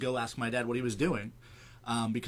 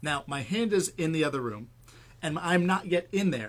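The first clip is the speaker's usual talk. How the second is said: ordinary talk, nothing marked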